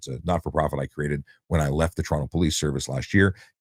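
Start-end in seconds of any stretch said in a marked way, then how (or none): none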